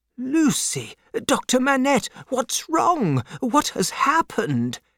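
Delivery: confused, very high, swooping cry. A man, as two people hurry into his room; confused cry. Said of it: "cried Mr. Lorry, confused".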